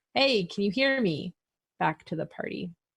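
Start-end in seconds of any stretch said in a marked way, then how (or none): 0.2-1.4 calling out, kept light. A player voices their character knocking on a wall and calling back to the party, yelling. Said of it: "I'm gonna just be yelling like".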